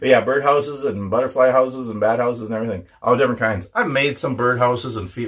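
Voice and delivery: fast, rattled-off, rushed chatter. Chatting before going off to cook dinner, talking fast. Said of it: "Why am I talking so fast?".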